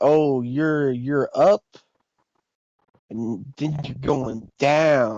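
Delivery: very slow drawl, each word dragged, down stretched. Retelling how another guy said it, imitating his very slow delivery. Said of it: "he said it like that so slowly".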